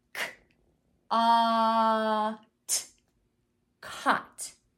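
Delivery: very slow sounding out, the a held long. Showing how to sound out and blend a word for a child; stretching out the vowel. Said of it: "So I made sure to stretch that out".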